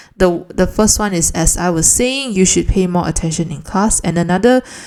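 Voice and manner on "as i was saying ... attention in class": ordinary delivery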